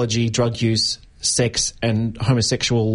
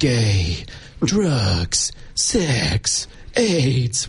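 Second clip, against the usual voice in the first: dark, ominous documentary narration, very drawn out. Describing a documentary's framing, imagining its voiceover in a mock-ominous voiceover tone. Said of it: "in an ominous tone going".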